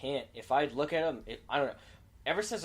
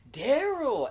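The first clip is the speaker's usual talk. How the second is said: very high, shrill, raised voice; 12 semitones higher, 8 dB louder than usual. Retelling how a coworker called out a name: imitating a high-pitched voice. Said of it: "his voice was so high".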